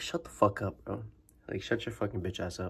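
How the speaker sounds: angry, furious, hushed whisper under the breath. Recounting a confrontation with a guy, still angry about it. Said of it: "Sorry, I'm still angry".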